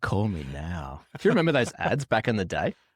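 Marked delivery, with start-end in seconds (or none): 0.0-1.0 seductive come-on phone-sex line voice. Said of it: "sound like one of those uh, phone sex workers".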